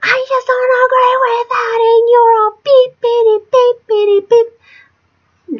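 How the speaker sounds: full-on yelling, very high and drawn-out. Demonstrating how not to voice disagreement with someone, yelling. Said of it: "but not like yell".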